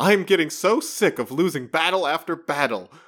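high, fed-up, frustrated shouting outburst. Recapping a story, the speaker acts out Namor's outburst: retelling Namor's yell. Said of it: "Namor just starts yelling like".

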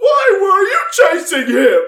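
very high, menacing, intimidating shout. In a tabletop game, the player's character yells at someone to intimidate him. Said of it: "But I'm gonna yell at him".

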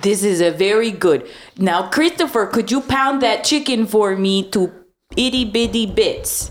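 put-on bayou Cajun accent, TV host style. Cooking in a scene, asking christopher to pound the chicken in a bayou cajun accent. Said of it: "Were you born in a bayou?".

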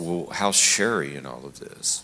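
normal talking voice

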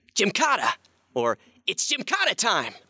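very high hero cry, pitch swooping around. Asked to do his voices for fans, the actor does Ben 10. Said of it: "Ben 10 would say".

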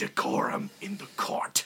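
breathy, whispered snake-woman hiss. Narrator voices a snake woman turning to a shouting character: hissing snake woman voice. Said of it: "she turns to you and hisses".

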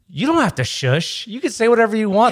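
mock, pointed, loud, high-pitched yell. Retelling answering a man who shushed them at a premiere: retelling a yell. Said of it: "and I'm yelling it".

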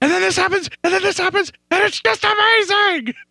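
put-on very high, hyped-up, gushing excitement. Retelling how he got hyped as a kid: imitating hyped childhood excitement. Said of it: "how I got hyped about Godzilla".

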